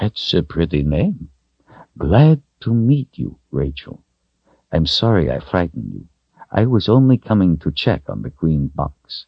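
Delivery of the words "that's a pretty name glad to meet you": plain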